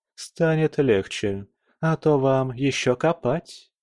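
ordinary delivery

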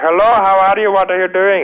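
very high, loud, heavy Indian accent. An actor explains how he chose not to play his character, doing an Apu impression. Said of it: "I didn't make him like Hapu where I was like".

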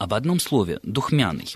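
ordinary talk, nothing marked

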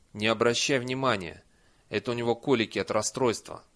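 plain reading voice

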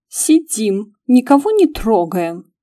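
affronted, righteously indignant tone. Answering a stranger's question on the narrator's behalf, with righteous indignation. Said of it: "С праведным возмущением ответил".

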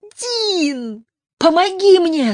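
shrill, very high all-out scream, "Дин" drawn out. A woman pinned down by her father screams for help as loud as possible. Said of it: "закричала она так громко, как только смогла".

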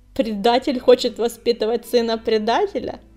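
husky laughing speech. The clan leader answers his proposal about the apprentice, laughing hoarsely. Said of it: "Хрипло рассмеялась она".

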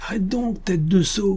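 stifled shout. The captain calls after a rider trying to flee, a shout kept low. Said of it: "cria encore le capitaine de manière à ne pas se faire entendre de loin".

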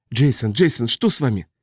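plain reading voice

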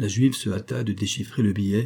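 ordinary delivery, nothing marked

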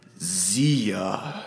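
big, resounding, grand, drawn-out pronouncement. Voicing a vengeful character speaking, in a booming voice. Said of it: "in his, like, booming voice".

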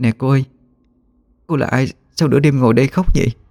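trembling, shaky, quavering voice. Stepping closer at midnight, she asks a crying woman who she is, trembling voice. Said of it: "run giọng hỏi".

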